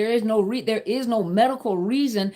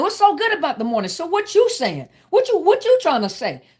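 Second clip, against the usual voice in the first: mock combative, high and swooping; 7 semitones higher, 3 dB louder than usual. Acting out how people with anger issues answer a greeting, imitating someone in fight mode. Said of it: "they just in fight mode".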